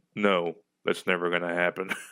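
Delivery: dry, expressionless, deep, flat deadpan delivery. Imagining himself voicing a character in that scene, deep deadpan voice. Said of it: "with my deadpan, like, deep voice".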